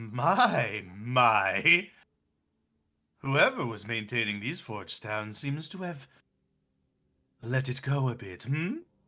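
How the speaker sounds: very slow, drawn-out voice, stretched "my, my". Voicing the caretaker as it appears and looks around: voicing the caretaker. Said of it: "caretaker pops up ... and he goes".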